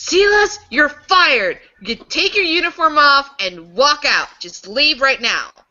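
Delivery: enraged yelling. Voicing a manager firing an employee: shouting in anger. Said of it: "he starts shouting".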